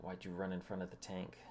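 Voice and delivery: ordinary talk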